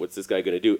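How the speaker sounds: usual speaking voice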